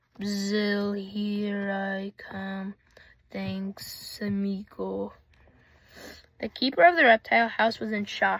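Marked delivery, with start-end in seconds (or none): 0.2-5.1 very slow, low, sibilant hissing snake voice. Narrator reads the escaping snake's words as it slides past a boy, low hissing voice. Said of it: "a low hissing voice".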